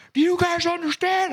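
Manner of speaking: play-acted, very high-pitched yelling. Retelling what he said to the kids he coaches, imitating himself yelling. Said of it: "and I'm yelling".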